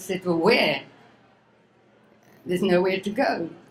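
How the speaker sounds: upset, emotional, getting worked up while speaking. Recalling being told to leave a family at age ten, getting upset. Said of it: "I'm sorry I'm getting upset".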